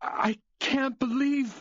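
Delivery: words coming through tears. Reacting to a victim at a crime scene, crying while talking. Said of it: "are you crying?".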